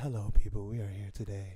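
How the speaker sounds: smooth, low radio-host style announcer delivery. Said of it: "look at that voice. He's like".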